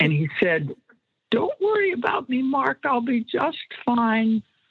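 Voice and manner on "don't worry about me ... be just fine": small, tiny, high-pitched puppet voice. Recounting how Fred spoke through a puppet, doing the little Arthur puppet voice. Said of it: "this little voice".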